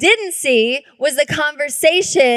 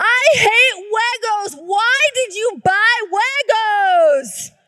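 put-on high-pitched sobbing tantrum scream, young child voice; 8 semitones higher than usual. A mother acts out her four-year-old son's outburst, imitating a child crying and screaming. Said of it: "commenced crying his eyes out and screaming".

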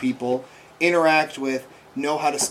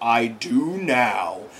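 sinister, foreboding, ominous, menacing voice; 3 semitones lower than usual. Retelling a scene where a strange thing answers a shouted question, put-on ominous voice. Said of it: "this ominous voice just goes".

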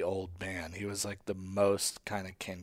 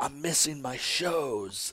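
acted pissed-off voice, raised pitch; 6 semitones higher than usual. Telling a story about a man who skipped the souffle, the speaker retells an angry complaint. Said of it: "he got all pissed off".

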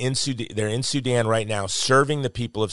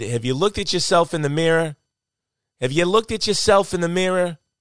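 homemade, put-on New Jersey accent, pitched up; 8 semitones higher, 4 dB louder than usual. Retelling what a man said when handing over a plane ticket, in a New Jersey accent. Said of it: "That's my New Jersey accent".

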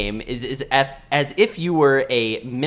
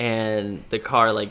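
plain

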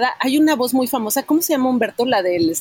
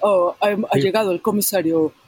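vintage TV western-style Spanish dubbing delivery; 3 semitones lower than usual. Recalling the old dubbed show Bonanza, imitating old Bonanza dubbing. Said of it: "el doblaje era así".

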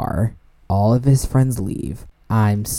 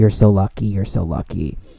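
whispered, hushed delivery. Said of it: "whispering in my ear".

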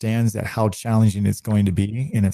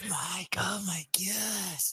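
put-on over-the-top dramatic voice, higher and quieter; 10 semitones higher, 15 dB quieter than usual. Retelling what a dramatic trainee said: imitating Gonzo, over-the-top dramatic. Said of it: "everything was drama".

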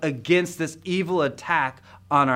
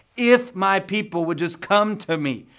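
mock, high, mildly fed-up, exasperated tone; 5 semitones higher than usual. Speaker retelling what God says about his people, with put-on frustration. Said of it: "can you sense a little frustration in God's voice here".

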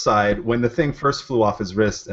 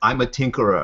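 put-on German-accented scientist voice. Describing a stereotypical scientist in online videos, speaker mimics him: German accent. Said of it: "he's got a German accent".

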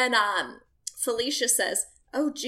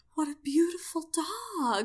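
mock gushing sincerity, sweet, pitched-up, dog drawn out; 5 semitones higher, 3 dB quieter than usual. Retelling a woman admiring a stranger's dog: imitating a sweet, sincere voice. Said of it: "she just sounded like so sweet and sincere".

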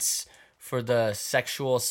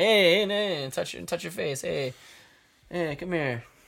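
put-on elderly Italian New York accent, higher, slower; 6 semitones higher than usual. Describing a 70-year-old Italian New York man and quoting him, old Italian New Yorker impression. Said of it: "some 70-year-old Italian New York guy".

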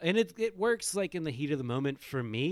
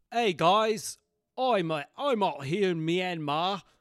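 generic put-on British accent; 4 semitones higher, 5 dB louder than usual. Asked for a report from Myanmar, the speaker answers in a generic British accent. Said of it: "my British accent".

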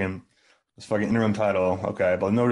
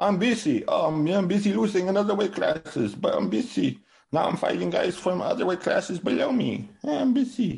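very high, squeaky, deliberately bad, way-off put-on voice; 11 semitones higher than usual. Acting out Canelo for a listener who objects to how he sounds, bad Canelo impression. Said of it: "That's not even what Canelo sounds like".

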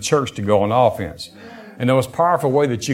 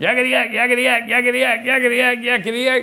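very high, yammering, chattering little imp voice; 13 semitones higher than usual. Retelling a vision, imitating a little demonic imp chattering nonstop: imitating a chattering demonic imp. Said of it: "that little demonic imp kept going".

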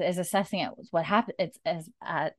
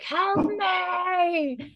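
acted shout, much higher; 12 semitones higher than usual. Recounting what a man did, acting out what he yelled, retelling a yell. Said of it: "And then he like yells like".

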